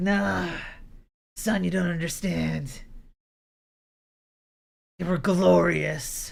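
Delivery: put-on thick raspy smoker voice. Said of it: "That voice is sounding a little thick".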